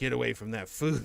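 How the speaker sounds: put-on growling dog voice. Retelling how the dog growls at the other pet over food: imitating a growling dog. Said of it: "he starts growling at her like".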